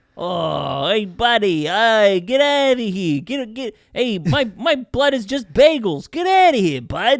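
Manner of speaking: super cartoonish, loud, swooping New York accent. Suggesting a talking device should have this voice, in a super cartoon New York accent. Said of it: "they should have like a super cartoon New York accent".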